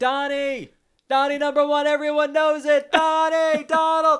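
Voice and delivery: put-on shouting. Retelling calling out to Donald as he came closer, the speaker reenacts his own shouting. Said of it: "And so I'm shouting".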